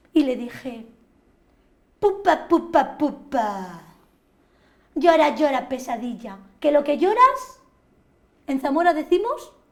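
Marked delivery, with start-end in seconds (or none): 2.0-9.5 brash, cocky, sassy, jeering, full of bravado. Retelling a taunt to a crying nightmare: retelling a cocky taunt. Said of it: "intenté ponerme chulita".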